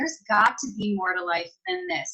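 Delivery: ordinary delivery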